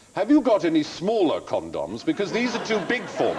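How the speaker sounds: loud, swooping, carrying voice. Retelling the embarrassing line he was made to say in a chemist's, in a loud voice. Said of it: "say in a loud voice".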